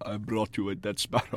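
hushed, breathy, barely audible near-whisper. Joking about a cat, doing an Anton Chigurh voice. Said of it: "speaks exactly like Anton Chigurh from No Country for Old Men".

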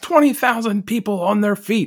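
very high-pitched, full-throated screamed call. Retelling a wrestling commentator's call: imitating a scream. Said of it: "he screams".

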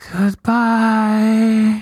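eerie, menacing, creepy fairy voice, high, drawn out. Retelling a fairy's goodbye in the game: imitating a creepy fairy voice. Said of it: "which fairy sounds like it's gonna kill me in my sleep".

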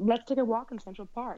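native-sounding American accent. Asked to repeat a sentence, a speaker says it in an american accent. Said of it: "can you put on an American accent?".

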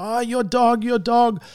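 toned-down, mild yelling in a mother voice. Retelling how a mum came around the corner: imitating a screaming mum.

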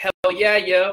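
put-on, buzzing with excitement. Retelling a guy coming back after calling in, imitating a guy's excitement. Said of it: "he's like all like excited and stuff".

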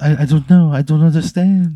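tearful, bewildered French voice. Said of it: "crying tears".

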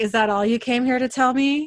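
acted coy, playful, teasing flirtation. Discussing an episode with co-viewers, quoting Eleanor's line as a flirty line. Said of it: "in that, like, voice".

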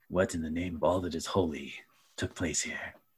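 uneasy, hushed, frightened half-whisper. Narrating a game, voicing a character still in guard position, half-whispering. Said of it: "whispers like".

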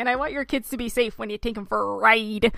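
Midwestern accent laid on hard, thick and exaggerated. Recalling a film character's bit that siblings used to imitate: exaggerated Midwestern accent. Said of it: "my sister and I used to always impersonate this".

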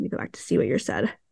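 fast soft whispered aside.

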